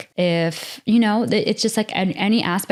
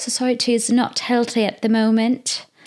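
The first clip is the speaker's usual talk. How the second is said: amateur put-on British English accent; 4 semitones higher than usual. Repeating a sentence just said, in an attempted British accent. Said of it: "That's my attempt at a British accent".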